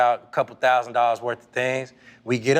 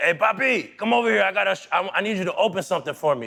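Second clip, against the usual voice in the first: put-on pitched-up Dominican accent; 6 semitones higher than usual. Retelling what a teammate said in the locker room: imitating Rafael Furcal's Dominican accent. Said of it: "you know how Dominicans talk".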